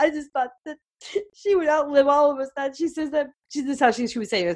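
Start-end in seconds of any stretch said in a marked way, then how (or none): 0.0-3.3 tearful laugh-crying, half laugh, half cry. Quoting their daughter during their mother's last words: imitating laughing while crying. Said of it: "She's laughing and crying at the same time".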